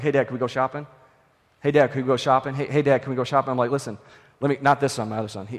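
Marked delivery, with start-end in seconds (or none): 0.0-3.5 mock pestering, lower and quieter. Father retelling his son asking again and again to go shopping, imitating son pestering. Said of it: "he got the shopping bug. He was like".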